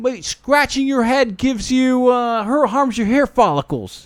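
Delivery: mock aggressive, pitched way up. Retelling what a man on stage said back: imitating an aggressive retort. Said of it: "he said it in a very aggressive way".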